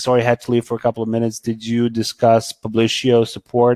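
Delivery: ordinary delivery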